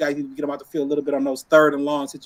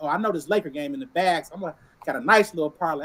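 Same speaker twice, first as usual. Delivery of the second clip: plain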